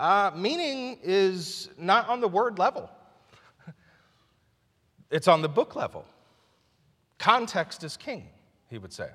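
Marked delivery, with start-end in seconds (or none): 0.0-8.3 very strange, peculiar, high, slow lecturing voice. Retelling what a seminary professor would say: imitating Doctor Kara's strange voice. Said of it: "his very strange voice".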